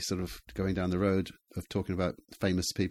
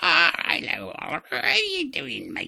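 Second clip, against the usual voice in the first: creaky, slow, rough, sing-song drawl in a man's voice; 9 semitones higher, 4 dB louder than usual. Showing the others an imitation of a local man: imitating Ron Perce's voice. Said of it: "tell me if I'm getting his voice".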